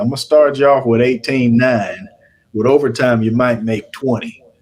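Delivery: put-on broadest, thickest Southern accent. Retelling a job offer from a man in his office, in a thick southern accent. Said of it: "in the most southern accent you can think of".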